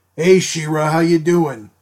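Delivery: gruff, rough Brooklyn accent, working-guy voice. Describing how a cartoon unicorn talks to She-Ra, gruff Brooklyn plumber voice. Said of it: "talks like a gruff, like, Brooklynite plumber".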